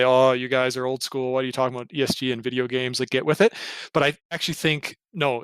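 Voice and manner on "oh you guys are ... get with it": plain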